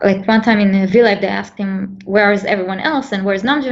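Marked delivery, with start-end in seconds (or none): none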